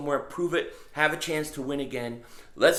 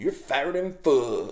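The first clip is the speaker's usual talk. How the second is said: put-on voice with a southern drawl accent; 4 semitones higher, 7 dB louder than usual. Retelling a voice heard while reading the scale at the nurse's: southern accent. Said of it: "clear as day in a southern accent".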